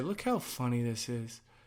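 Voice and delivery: ordinary talk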